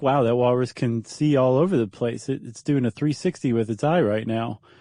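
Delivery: ordinary delivery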